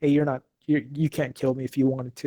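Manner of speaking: plain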